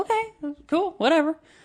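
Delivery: very high, sincere-sounding voice. Retelling their own reply to her about a massage, in a high voice. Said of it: "that high voice that means you're sincere".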